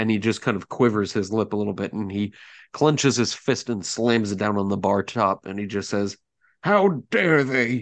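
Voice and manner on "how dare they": put-on sad, high, weeping old man voice. Voicing a man at a bar who slams his fist down, sad old man crying. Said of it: "sad old man crying kind of way".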